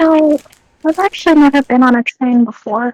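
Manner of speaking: unassuming, gently put, mild-mannered. Voicing Salem answering the party about trains: very softly spoken. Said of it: "Salem very softly says to you guys".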